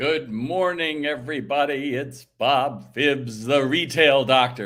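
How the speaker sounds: grand, big, slow broadcast announcer style. Opening by greeting everybody and giving his name, in a big announcer voice. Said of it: "That was my big announcer voice for you".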